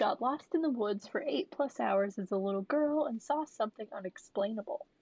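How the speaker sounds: ordinary delivery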